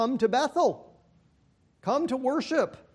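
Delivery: high-pitched tone dripping with irony and sarcasm. Quoting God's invitation to Bethel: imitating a sarcastic tone. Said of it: "plenty of irony and sarcasm in his voice".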